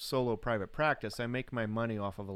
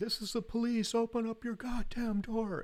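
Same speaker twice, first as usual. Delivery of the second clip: very high, shrieking scream; 12 semitones higher than usual. Retelling someone at the door at midnight claiming to be police, imitating someone screaming. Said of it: "somebody's out there screaming".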